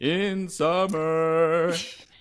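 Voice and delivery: high cartoon snowman voice. While others discuss Frozen, quoting the snowman's line: Olaf impression. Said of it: "You're good at impressions".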